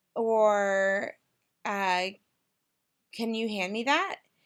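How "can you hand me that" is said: rising intonation, voice sliding up on that. Demonstrating how a voice slides up at the end of a question: rising question intonation. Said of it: "we would slide our voice up".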